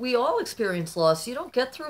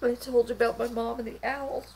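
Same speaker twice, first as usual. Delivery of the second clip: high, tearful crying. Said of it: "I'm gonna cry again".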